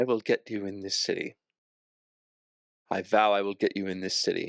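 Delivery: soft, quiet, held-back voice. Acting out what a woman will say as she surveys this, first quietly. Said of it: "first quietly".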